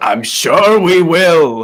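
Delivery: put-on booming, very slow, loud old man voice.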